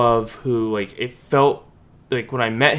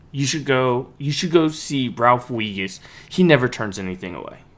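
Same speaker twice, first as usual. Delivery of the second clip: ordinary delivery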